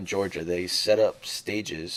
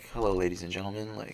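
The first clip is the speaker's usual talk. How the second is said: put-on flight attendant announcer voice. Describing a stage show by imitating a plane announcement: imitating an airline cabin announcement. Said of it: "you know how you get on a plane and they're like".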